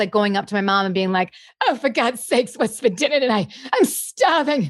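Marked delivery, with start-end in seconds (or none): 1.7-4.7 put-on fussy diva voice. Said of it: "always doing [name] and [name]".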